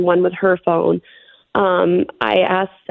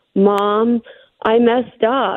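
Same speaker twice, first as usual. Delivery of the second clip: play-acted crying, very slow, sobbing through words; 3 semitones higher than usual. A mother recounting her daughter's phone call, imitating her daughter sobbing. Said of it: "she's still sobbing and crying".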